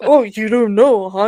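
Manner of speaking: snippy tone with a little attitude. Retelling a customer's reply after being told no: imitating someone with attitude. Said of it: "He had, like, a little attitude".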